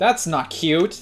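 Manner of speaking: booming shout. Trying to run in a game, the player shouts at what chases them: yelling. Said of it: "Sorry for yelling".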